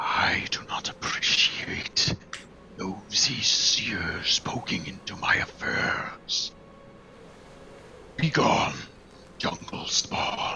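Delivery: slow, whispered creature voice. Voicing a creature that telepathically warns off a spying seer: telepathic creature voice. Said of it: "and you hear in your mind".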